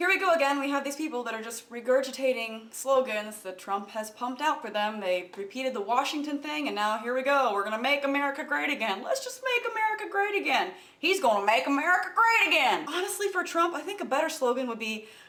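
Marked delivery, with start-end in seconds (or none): 7.5-12.9 mocking, laid-on-thick put-on Southern drawl. Mocking supporters who repeat a slogan, mocking Southern accent. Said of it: "why do you use a Southern accent".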